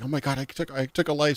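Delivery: imitated distraught crying. Retelling a game scene after her first kill: imitating someone distraught and crying. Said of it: "distraught and she's crying and she's like".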